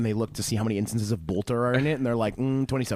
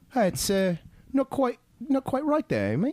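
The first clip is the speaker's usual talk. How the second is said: very high, swooping, drawn-out British accent; 13 semitones higher than usual. Speaker imitates how British people would react instead of nerdy screeching: British accent. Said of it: "British people ... would just usually be like".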